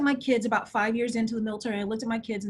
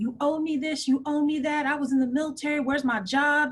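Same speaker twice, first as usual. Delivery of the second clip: put-on, heated, indignant, demanding tone full of attitude; 4 semitones higher than usual. Recalling yelling at a receptionist about what was owed, retelling an angry yell. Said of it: "I was literally yelling at this poor receptionist".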